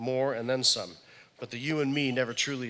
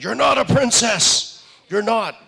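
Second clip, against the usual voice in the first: put-on scream, higher and louder; 10 semitones higher, 13 dB louder than usual. Retelling a mother in a princess dress yelling at a child: imitating a mother screaming. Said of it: "she's screaming in Disneyland".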